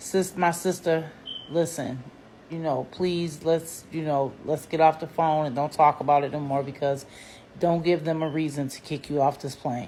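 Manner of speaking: very quiet, hushed, respectful tone. Retelling a stewardess's warning to get off the phone: imitating someone speaking very quietly. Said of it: "very quietly and very respectful".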